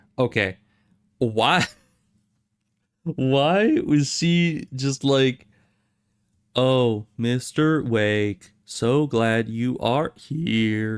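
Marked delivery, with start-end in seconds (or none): 6.5-11.0 robotic, entranced voice. Speaker mocks how a character greets Mister Wake: Rose as hypnotized robot. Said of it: "a freaking hypnotized robot".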